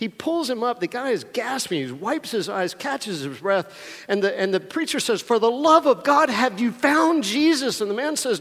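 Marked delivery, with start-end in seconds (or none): 5.2-7.8 loud, high, exasperated, fed-up, at wit's end. Telling a joke, voicing a preacher at his wit's end: acting exasperated. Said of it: "at his wit's end".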